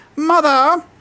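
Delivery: very high-pitched cry. Recalling what they said on meeting the cultists, high-pitched voice on 'mother!'. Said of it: "in a high pitched voice".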